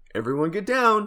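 playful line reading. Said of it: "fun line reads".

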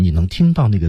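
normal talking voice

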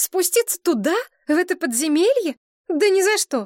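very high, scared, frightened exclamation. Narrator reading Maria's reply to her companion: frightened cry. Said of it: "испуганно вскрикнула Мария".

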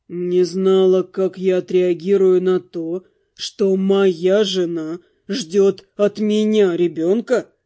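low, slow, questioning tone, pronouns stressed. Narrating a novel, a man quietly asks his wife back about her news. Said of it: "Негромко переспросил он".

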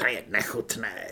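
hissing. One of the girls walking toward a guard answers a whispered plan: hissed. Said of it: "sykla Řimbo".

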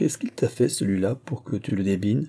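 plain

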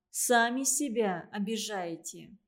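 ordinary delivery

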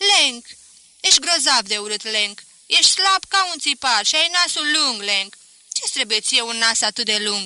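shouted. Floating at the water's surface, the swimmer shouts to Lenk. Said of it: "Îmi strigă".

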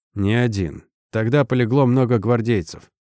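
ordinary delivery, nothing marked

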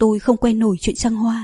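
ordinary delivery

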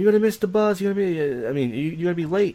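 mock scolding scream, high and shrill. Retelling how mom screamed about missing the bus: imitating mom screaming. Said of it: "my mom would scream".

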